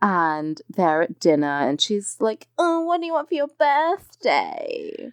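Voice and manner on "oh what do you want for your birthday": very high, swooping, sing-song sexy voice. Recapping a dinner scene between Samantha and Richard, in Samantha's sexy voice. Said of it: "She says it in that voice".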